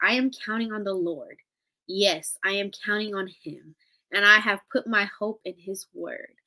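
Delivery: ordinary talk, nothing marked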